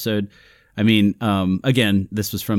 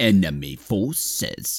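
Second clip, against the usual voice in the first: put-on stilted, stiff old-TV sci-fi alien-villain voice; 3 dB quieter than usual. Recapping an episode for co-hosts, early Doctor Who villain voice. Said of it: "you have to talk like this".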